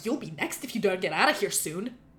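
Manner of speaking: put-on angry voice. Showing how to deliver a warning line: angry mom voice. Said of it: "Like an angry mom".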